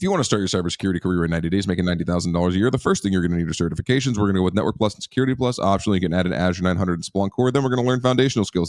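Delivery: speaking very quickly, rapid-fire. Repeating a fifteen-second cybersecurity career roadmap, in very fast speech. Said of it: "I can speak really quickly".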